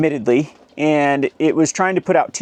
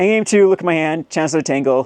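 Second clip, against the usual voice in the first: ordinary talk, nothing marked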